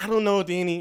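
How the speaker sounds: high put-on woman's voice. Retelling a FaceTime call from Taylor: imitating Taylor. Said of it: "that's how she be".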